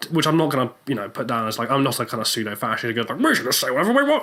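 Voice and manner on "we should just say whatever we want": high-pitched, put-on grandfatherly old man voice. Mocking what a pseudo-fascist says, in a grandfatherly put-on voice. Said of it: "Don't know why I just did that voice".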